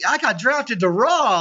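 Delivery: put-on bright, upbeat, high, all-positive cheerful voice. Retelling what Bo said when JoJo interviewed the Social Outcasts, acting out someone positive and happy. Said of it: "like all positive and happy".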